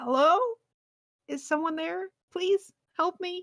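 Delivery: very high, feeble, weak, cracking voice. Voicing someone calling out from a cell: cracked and weak voice. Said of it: "A cracked and weak voice calls out".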